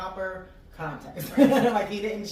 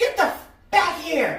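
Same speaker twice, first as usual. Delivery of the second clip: put-on very high, shrill, loud kid's yell; 9 semitones higher, 7 dB louder than usual. Speaker retells what their son yelled outside the school: retelling son's yell. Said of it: "and he yells".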